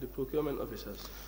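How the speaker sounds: too quiet, too softly spoken to be heard.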